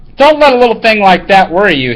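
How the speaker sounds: ordinary talk, nothing marked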